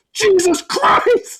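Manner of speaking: sudden shrill yell at very high pitch. Retelling a reaction to a scary game scene: imitating own yell. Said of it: "and I yelled".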